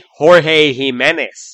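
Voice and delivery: American-English accent.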